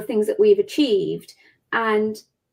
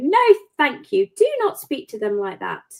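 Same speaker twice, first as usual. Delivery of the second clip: acted, big, swooping grown-up voice; 3 semitones higher than usual. Showing how they step in to stop a bully, using a big voice. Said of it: "I'll use my big voice and go".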